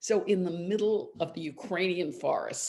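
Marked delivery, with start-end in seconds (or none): none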